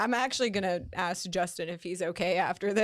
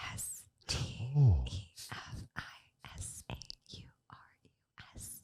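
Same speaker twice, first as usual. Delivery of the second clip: slow, soft whisper, letter by letter; 11 semitones lower, 6 dB quieter than usual. Spelling out a social media handle after being asked to whisper: whispering. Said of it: "Can you whisper it?".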